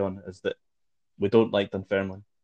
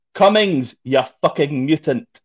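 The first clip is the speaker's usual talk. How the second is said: loud, shrill, abrupt sudden shout; 6 semitones higher, 8 dB louder than usual. Recounting how someone shouted at Jason Cummings out of nowhere: retelling a shout. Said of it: "out of absolutely nowhere just shouts".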